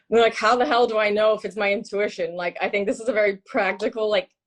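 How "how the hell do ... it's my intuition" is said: ordinary talk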